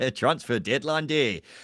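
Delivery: put-on loud, high, laid-on Scottish accent. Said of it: "So Scottish. That's too Scottish".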